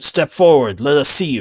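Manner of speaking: loud yelling called out from a distance. Game master voicing those who yell to the hunter with prisoners: yelling to him. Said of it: "they would yell to him".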